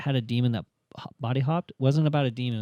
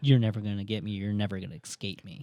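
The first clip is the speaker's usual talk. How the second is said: put-on menacing whisper, lower and quieter; 4 semitones lower, 6 dB quieter than usual. Retelling a movie scene where a demigod whispers in someone's ear: imitating a menacing whisper. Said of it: "gets up in his ear and whispers".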